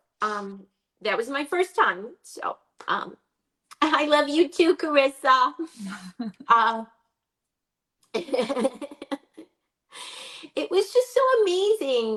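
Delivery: tearful voice, crying while talking. Speaker, sad to be home after the best time ever, crying while talking. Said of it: "I'm crying".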